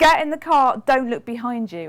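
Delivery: loud, sudden, mock screamed yell. Retelling how the partner suddenly screamed from the car: imitating Lee screaming. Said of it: "he suddenly screamed at me".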